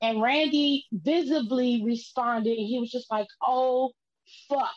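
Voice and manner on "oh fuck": put-on cry of pain. Retelling a wrestler's reaction after a bad landing: imitating a pained curse. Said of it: "it hurt".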